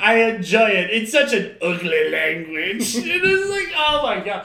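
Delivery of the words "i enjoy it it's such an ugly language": louder, laid-on-thick mock French accent. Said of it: "just sounding like Pepe Le Pew".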